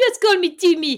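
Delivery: high, loud, mock French accent. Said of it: "That's a French fucking accent".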